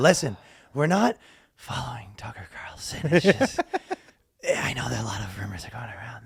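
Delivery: put-on half-asleep, drowsy whispering murmur. Mocking a man who lulls himself to sleep while talking, imitating a drowsy whisper. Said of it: "how you talk when you start going to sleep".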